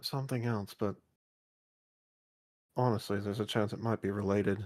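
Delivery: very quiet, barely audible half-whisper. Role-play character answering a question about being a werewolf, half-whispering very quietly. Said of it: "I'm whispering then. Very quietly".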